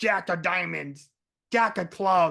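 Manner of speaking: really demonic, possessed horror-movie demon voice. Retelling a story, quoting Bessie in her demonic voice. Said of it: "goes into the um like the really demonic voice".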